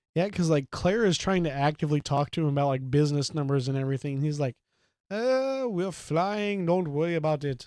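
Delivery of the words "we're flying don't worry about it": amateur, slow, high-pitched put-on Indian accent. Retelling how he answers Claire about business numbers, in an Indian accent attempt. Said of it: "that was an Indian accent attempt".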